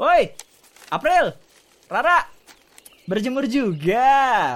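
very slow calling out, final word stretched. Calling out to two people sunbathing nearby, who tell him not to yell: shouting. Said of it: "gak usah teriak-teriak".

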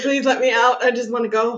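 ordinary talk

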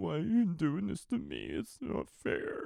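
put-on high, swooping, childish whine with creaky edge. Retelling how a killer complained after getting caught: imitating childish whining. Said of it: "they act like little kids".

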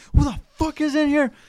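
put-on very high, desperate half-scream. Retelling a guy screaming in desperation, imitate his near-shriek. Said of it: "casi chillando".

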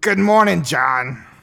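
terrible, shrill, very loud, high voice. Acting out a paid celebrity video greeting: terrible Gilbert Gottfried voice. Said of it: "I'm stuck in Gilbert Gottfried voice".

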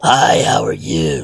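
slow, heavy, raspy chain-smoker's voice. Imitating a woman who smokes many cigarettes a day: imitating a heavy smoker's voice. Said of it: "going on their twenty-fifth cigarette of the day".

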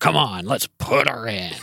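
full-on, heavy pirate voice. Reading their own story aloud, voicing an oceanographer character, pirate voice. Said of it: "You're really leaning into that pirate voice".

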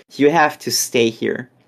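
plain

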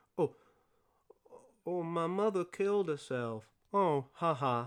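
understated flat non-reaction. Mocking an understated film line as not a real reaction: mock understated delivery. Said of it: "not like a real reaction".

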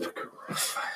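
whispered, dramatic, intense, very quiet. Showing the others that the word sounds more intense whispered: whispering. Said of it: "You have to whisper it".

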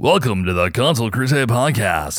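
goofy, silly put-on funny voice. Showing how the podcast intro sometimes goes: put-on funny voice. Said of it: "Sometimes I'll do a funny voice".

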